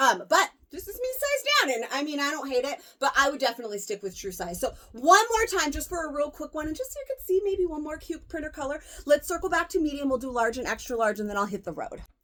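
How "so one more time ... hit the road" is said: hurried, rushed, really fast rattling talk. Speaker in a hurry wraps up trying on sizes, talking really fast. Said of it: "Have I been talking really fast?".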